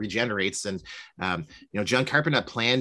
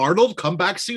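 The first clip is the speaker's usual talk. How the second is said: put-on very high, raised old Hollywood transatlantic accent; 9 semitones higher, 6 dB louder than usual. Describing the mom in 80s horror films, in a transatlantic accent. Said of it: "like almost like a transatlantic accent".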